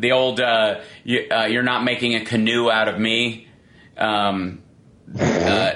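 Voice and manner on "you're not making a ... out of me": ordinary talk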